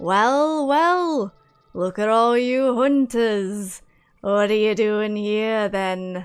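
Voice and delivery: spider creature voice, slow and drawn-out. Describing the noise the hunters heard, then voicing an unseen creature speaking to them. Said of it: "you hear the voice go".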